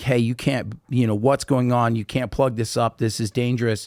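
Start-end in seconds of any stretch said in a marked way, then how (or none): none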